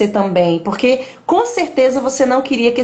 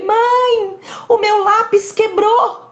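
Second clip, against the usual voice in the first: put-on desperate child crying, higher pitched; 10 semitones higher than usual. Retelling her six-year-old son's words about his broken pencil: imitating a child crying desperately. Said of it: "ele começou a chorar desesperadamente".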